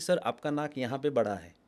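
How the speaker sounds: ordinary talk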